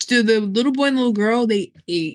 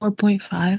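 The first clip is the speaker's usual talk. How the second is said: hushed, whispering voice. Giving a movie rating to the other speakers, whispering. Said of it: "You're whispering".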